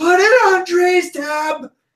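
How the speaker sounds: drawn-out all-out shout, very high, very slow. Playing a character who shouts as loud as possible. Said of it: "I shout as loud as I can".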